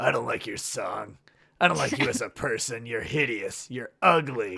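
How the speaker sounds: dark, threatening delivery in a deep, menacing voice. Reading a story aloud, voicing a character's insults in a deep, menacing voice. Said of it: "Taylor said in a deep, menacing voice".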